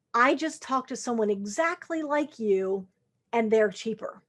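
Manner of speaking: ordinary delivery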